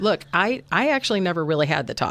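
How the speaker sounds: normal talking voice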